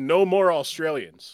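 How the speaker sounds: ordinary talk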